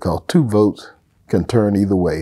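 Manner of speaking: plain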